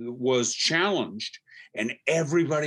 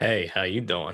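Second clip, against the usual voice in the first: sleazeball voice; 6 semitones lower than usual. Asked to do a sleazy character, giving a greeting in a sleazy character voice. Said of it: "Randy, do one".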